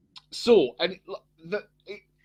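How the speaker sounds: stammering, stuttering with broken-off false starts and restarts. A show host loses the thread mid-sentence: stuttering. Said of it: "I'm stuttering".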